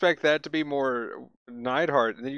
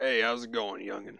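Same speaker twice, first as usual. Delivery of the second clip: put-on soft, quick old man voice; 4 semitones lower, 7 dB quieter than usual. Talking about a character named Curtis, doing his old-man voice. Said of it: "He's just like he's old man".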